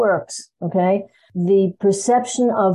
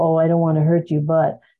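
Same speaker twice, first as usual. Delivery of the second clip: mock sweet voice, very sweet, lower; 3 semitones lower than usual. Imitating a passive aggressive difficult person: imitating a very sweet tone. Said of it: "They're saying it very sweetly".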